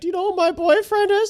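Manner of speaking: very high-pitched, mock tearful crying voice. Retelling a girlfriend's words during a DUI arrest: imitating someone crying.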